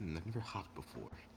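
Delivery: soft, mumbled mutter under the breath. A character who refused help and tries to hop, muttered under breath. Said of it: "say under his breath".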